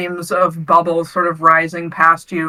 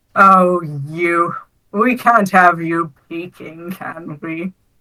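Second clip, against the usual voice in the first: voice brimming with amusement. Game master voices a voice resonating through the water, amused voice. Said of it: "a very amused sounding um, voice".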